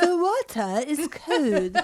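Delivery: imitated English accent. Imitating an accent-lesson cassette tape: imitating an English accent tape. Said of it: "learning an English accent in college and we had a cassette tape".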